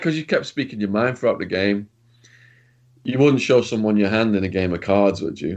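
ordinary talk

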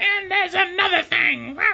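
very high promo voice. Imagining a wrestling promo, imitating how Shayna talks on the mic: Shayna impression. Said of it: "that's how she sounds when she has the mic".

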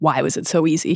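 ordinary delivery

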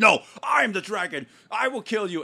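high, loud, overacted scream at top volume.

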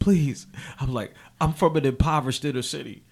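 mock-emotional, pleading tone. Retelling being put in cuffs and about to be taken in, retelling emotional pleading. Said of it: "I got a little emotional".

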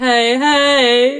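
unenthusiastic hey hey.

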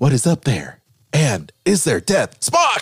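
swooping delivery with dramatic pauses. Retelling a space flight account in a William Shatner impression with dramatic pauses. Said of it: "I'm trying to do the dramatic pauses like".

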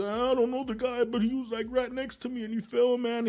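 high, mock sobbing, shocked, crying voice. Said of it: "he's in shock and he's crying".

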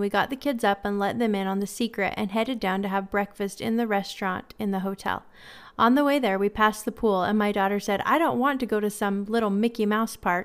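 ordinary talk, nothing marked

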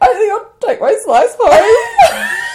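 play-acted holding back tears, very high-pitched and slow. Retelling going to her desk after being made redundant, retelling holding back tears. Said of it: "trying not to cry".

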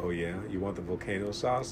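smooth jazz radio host voice. Retelling ordering at Taco Bell, the speaker voices the worker in a smooth jazz host voice. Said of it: "sound like a smooth jazz host".

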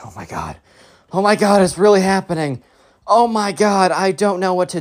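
frantic, panicked, freaking-out voice. Retelling a nervous camper before going on stage: imitating panic. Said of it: "Ben is starting to freak out".

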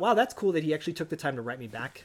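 ordinary delivery

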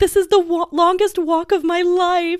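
acted yell projected across distance. Telling a story, the speaker re-enacts yelling over to him: retelling their own yell. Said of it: "I yelled over to him".

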